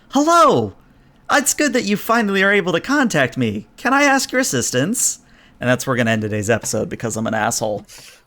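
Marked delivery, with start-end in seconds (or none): 0.1-5.1 put-on bright, friendly, high, laughing childlike glee. Voicing a friendly voice heard in the story, with childlike glee. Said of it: "same sort of childlike glee, same sort of sort of like laughing child".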